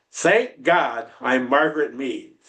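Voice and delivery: loud, full voice. Retelling what a woman would say after stomping her feet: a loud declaration. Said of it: "She would say in a loud voice".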